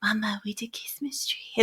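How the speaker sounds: super-quiet, sneaky, barely audible whisper. Retelling how a child kept saying it afterwards: imitating a child whispering. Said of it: "whispering it super quiet".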